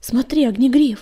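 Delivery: agitated, anxious voice. A companion calls out on seeing an apprentice lying bleeding in the snow, agitated. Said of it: "взволнованный голос песчаной бури".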